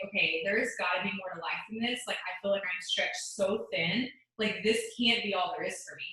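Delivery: ordinary delivery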